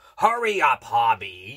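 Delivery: grumpy, low, loud growl. Narrating a story: a monster in a very bad mood hurries his child, growling. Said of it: "he growled".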